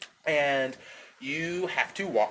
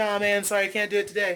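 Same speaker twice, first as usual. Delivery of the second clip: put-on friendly, easygoing, polite tone; 4 semitones higher than usual. Acting out turning down a stranger asking for money, acting out a nice refusal. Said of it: "you're just saying it in like a nice way".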